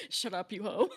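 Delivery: side-of-the-mouth, tossed-off snide aside. Retelling a quiet player's remark during D and D: imitating Hunter muttering under his breath. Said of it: "Hunter under his breath goes".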